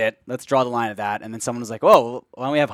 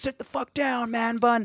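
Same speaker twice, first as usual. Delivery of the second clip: put-on very high, shrill screamed voice; 11 semitones higher, 4 dB quieter than usual. Describing a crowd, acting out rival fans screaming at a Brooklyn fan. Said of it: "who are just screaming at him, being like".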